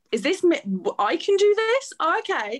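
incredulous, disbelieving tone.

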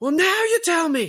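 very high-pitched, screaming outburst. Retelling a film scene where Colin Farrell screams: imitating Colin Farrell screaming. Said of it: "the screaming of".

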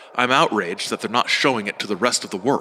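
ordinary talk

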